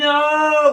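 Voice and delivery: high, loud, dramatic, shocked outburst.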